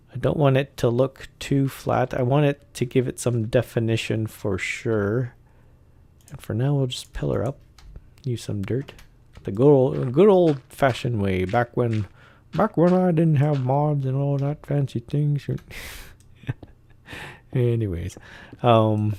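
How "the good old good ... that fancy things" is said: put-on voice of an old-timer. Speaker narrates their building, doing an old guy impression. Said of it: "that's my old guy impression".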